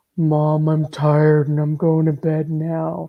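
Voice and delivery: very low, slow, rumbling voice. Imitating Chris when he gets tired: imitating Chris's very low voice. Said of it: "And it's so low".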